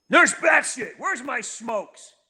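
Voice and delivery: revved-up, cranked delivery. Explaining how his voice changes with the situation, the speaker demonstrates: amped-up voice. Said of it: "When it's amped up".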